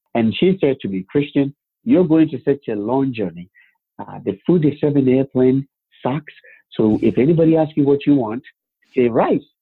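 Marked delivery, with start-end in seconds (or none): none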